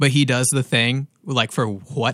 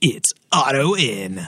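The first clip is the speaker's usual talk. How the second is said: put-on, big wrestling-style announcer voice. Imitating how he does the intro, in an announcer voice. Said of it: "he can do that awesome announcer voice where he's like".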